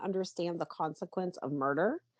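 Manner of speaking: ordinary talk, nothing marked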